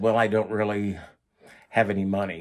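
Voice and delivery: ordinary talk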